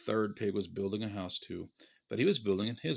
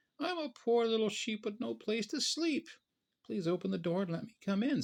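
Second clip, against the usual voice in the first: very high-pitched, sweet little voice; 12 semitones higher than usual. Narrator reads the disguised wolf at the pigs' door, in Big Bad Wolf's sweet little voice. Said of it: "said the big bad wolf in a sweet little voice".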